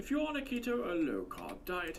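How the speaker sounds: funny fake British accent, high and swooping. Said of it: "That's his fake British accent".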